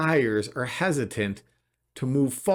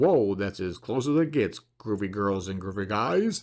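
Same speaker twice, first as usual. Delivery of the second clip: put-on on-air radio announcer voice; 5 semitones lower than usual. Reading out monthly listing numbers, then a put-on radio voice. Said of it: "That was my radio voice".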